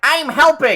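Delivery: tiny creature voice, very high and loud. A card player imitates kobolds while explaining a card effect, kobold voice. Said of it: "I like your kobold voice".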